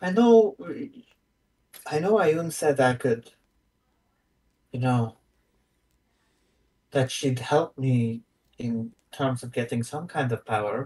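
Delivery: confused, bewildered character voice. Playing a confused character who doesn't know where to start: confused, in character. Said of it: "She's confused".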